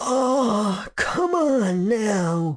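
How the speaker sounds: feeble, very slow moan. A man in hospice care moans back at the narrator, weak and soft. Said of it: "he moaned".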